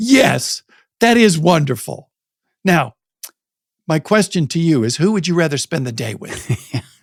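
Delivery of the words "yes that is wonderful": deliberate, slow, emphatic, pointed tone. Speaker retelling what they said about a couple walking arm in arm, retelling a very loud reply. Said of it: "in a very loud voice".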